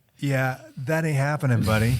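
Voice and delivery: ordinary talk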